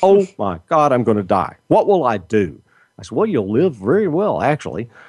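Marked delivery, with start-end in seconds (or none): 0.0-2.6 mock-panicked, acted-out panicky voice. Retelling how a woman reacted to a strict diet, imitating her panic. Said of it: "That threw her into a tailspin".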